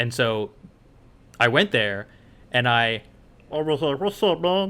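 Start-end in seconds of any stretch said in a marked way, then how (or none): 4.0-4.7 high, pitched-up cartoon-style voice. Retelling doing an impression at a booth: Meatwad voice. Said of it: "I did a meat wad".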